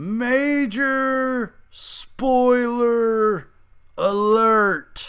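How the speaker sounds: spoken slowly, words drawn out. Warning viewers before spoilers so they can leave: said slowly. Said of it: "I just said that slow".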